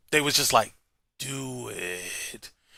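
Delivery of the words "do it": very hushed, low, sinister villain voice. Imagining whoever in the room approved raising the price: mock-evil voice. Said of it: "with the evilest voice that they could muster up".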